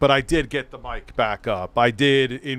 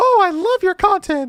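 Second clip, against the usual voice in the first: very high-pitched, loud put-on voice; 5 dB louder than usual. Retelling a fan who watches his stuff greeting him, imitating a fan's high voice. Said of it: "his voice was like this".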